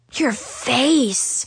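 gasped words. Narrator reads one of two friends reacting to the narrator's revealed face: gasped. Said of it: "Zoe gasped".

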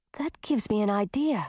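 ordinary delivery

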